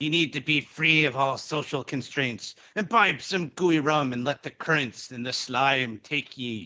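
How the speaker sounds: put-on pirate voice. Introducing oneself on a podcast in pirate speak. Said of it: "this is not the time for pirate shenanigans".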